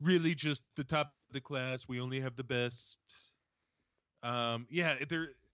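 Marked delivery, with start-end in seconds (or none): 0.0-3.0 breathy put-on politician voice. Riffing on a briefing introducing Doctor Birx: Trump impression. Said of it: "it is a tough impression".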